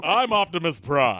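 loud, booming, deep and proper voice. Trying the voice after being told how: Optimus Prime voice. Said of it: "You just have to be very proper and deep".

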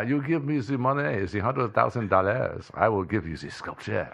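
put-on French accent impression. Acting out a short bit in a put-on french accent. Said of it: "it was a French accent".

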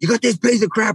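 mock very high-pitched, shrill yelling. Retelling what a man yelled at the speaker while landing a fish, imitating someone yelling. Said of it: "he's yelling at me".

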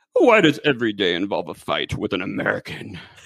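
put-on puppety voice with wide pitch swoops. Showing off impressions to someone who likes them, do a Muppet-like Maggie Smith impression. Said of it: "sounds more like some kind of Muppet".

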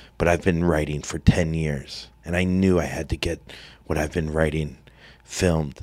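low, put-on dead-earnest sincere delivery. Retelling Johnny looking into the camera about another Jackass, mock-earnest Johnny impression. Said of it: "Johnny looks at the camera earnestly".

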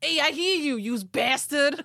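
put-on New York Long Island accent. Asked to redo a man's yell into the sky with his first accent, do Ed's Long Island accent. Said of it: "you should do it with the first accent that you gave him".

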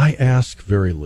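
low, quavering voice. Recalling how a mother answered kids putting off chores: imitating mom's low quavering voice. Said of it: "lower her voice, put a little bit of a quaver in it".

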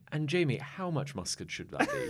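very crisp, sing-song woman's voice. Retelling an early cooking show's off-screen voice: imitating a crisp woman's voice. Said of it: "very crisp woman's voice would go".

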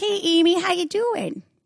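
broad Midwestern accent, pitched very high. Showing how talking with Midwesterners brings the accent out, in a thick Midwest accent. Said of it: "a thick Midwest accent".

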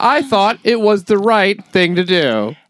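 very high, loud, slow, drawn-out interviewee voice. Imitating the man interviewed in the news story about the bag: impression of the interviewed guy. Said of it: "they interview the guy".

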